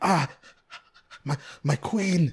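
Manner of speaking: slow, very high-pitched, drawn-out weeping cry. Retelling a movie scene where the king cries to his queen: imitating King Leonidas crying. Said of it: "Li-, like that, and he's crying".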